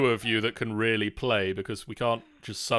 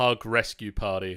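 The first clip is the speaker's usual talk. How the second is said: usual speaking voice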